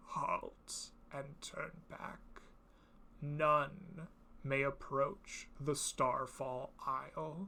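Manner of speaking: parched, cracked, broken undead croaking. Voicing a dead warrior warning travelers away: dry, broken croaking voice. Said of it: "croaks out in a dry and broken voice".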